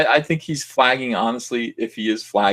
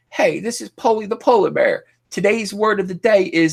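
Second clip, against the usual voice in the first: very high voice with thick put-on Southern accent; 10 semitones higher than usual. Imitate a man introducing his polar bear in a video, in a put-on deep Southern accent. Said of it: "a deep Southern accent".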